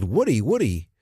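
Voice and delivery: put-on shout. Retelling how they called out a name to a friend from down the block, imitating the yell. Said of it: "he said to me very seriously".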